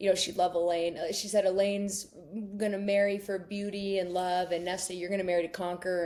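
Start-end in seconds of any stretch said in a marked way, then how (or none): none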